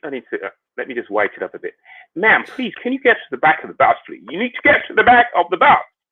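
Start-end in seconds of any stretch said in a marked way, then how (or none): 2.2-5.8 very high, bad American accent slipping into English. Acting out someone addressing a woman on a bus, in a bad american accent that sounds english. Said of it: "that was an English accent, wasn't it?".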